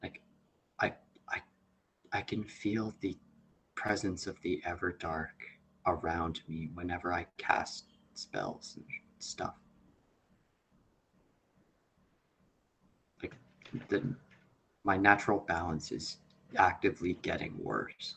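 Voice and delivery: hushed, secretive whisper. Telling the party in character about feeling the everdark: whispering. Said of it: "I'm saying this in a whisper".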